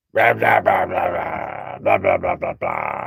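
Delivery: low, rough, croaky, swooping cartoon-frog babble. Speaker mocks an annoying woman they will be watching, cartoon-frog voice. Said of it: "speaks like a cartoon frog".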